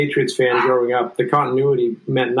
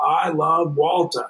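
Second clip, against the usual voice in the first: called out with easy fondness; 3 semitones higher than usual. Recalling how Tommy would yell out his love for a hustling bench player, Tommy impression, imitating his yell. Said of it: "he would yell out".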